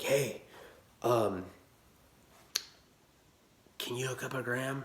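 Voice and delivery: soft, hushed half-whispered voice. Speaker reenacts phoning a woman from their car, retelling a half-whisper. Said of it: "I'm like whispering".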